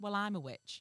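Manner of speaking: normal talking voice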